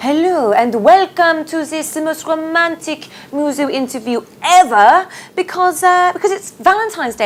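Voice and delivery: high-pitched put-on French accent throughout. Welcoming viewers to a Valentine's Day interview, put-on French accent. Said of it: "I'm doing my French accent there".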